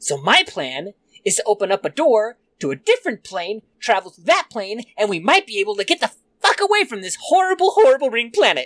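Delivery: eccentric, crazy mad scientist character voice. Game master voicing the scientist, explaining his plan to the players: lab-coat scientist character voice. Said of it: "Just that he's a scientist that lives here. / Door flings open. There's that guy again. He's got the manacle on, he's got the lab coat, he's got all the crazy shit, his hair's all messed up. / He's li".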